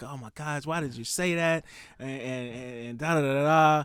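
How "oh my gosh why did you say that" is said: sobbing, frantic, hysterical crying outburst. Retelling what a girl said while crying hysterically: imitating someone crying hysterically. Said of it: "she's crying hysterically".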